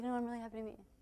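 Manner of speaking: mimicked unenthusiastic voice. Coaching an audience on greetings, mimicking people who don't sound happy: mock flat, unhappy greeting. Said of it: "a lot of people will come up and be like".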